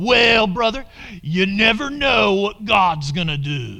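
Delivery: smug, pious, slow, put-on sanctimonious voice. Imitating what certain people tell you, in a put-on religious voice. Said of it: "I'm going to do it in my religious voice".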